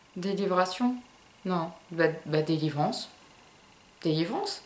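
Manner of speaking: low, soft, puzzled muttering.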